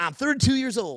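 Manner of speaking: heavily laid-on Southern drawl. Retelling a chat with a guy from the rib store, Texas-Tennessee accent imitation. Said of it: "I'm going to try to imitate him".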